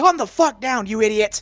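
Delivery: piercing, very high, very loud, shrill scream. Playing a character who points a handgun at another and screams: screaming in character. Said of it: "point it at you and scream".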